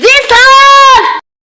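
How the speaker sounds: shrill, loud yelled reply.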